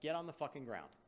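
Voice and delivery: ordinary talk, nothing marked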